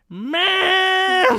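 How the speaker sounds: "ma'am" stretched out, very high and very loud. Joking about a stage name, doing a Cartman voice. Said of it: "it sounds like Cartman".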